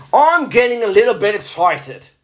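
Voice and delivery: clumsy, bad fake accent that comes out Australian. Reading a man's comments aloud in his voice, with a bad put-on accent, sounding Australian. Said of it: "That sounds more Australian".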